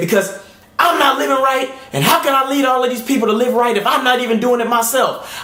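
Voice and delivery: acted heated, furious, angry outburst, high-pitched. Retelling snapping at a lady who asked why no answer was given: retelling an angry outburst. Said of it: "I got so angry".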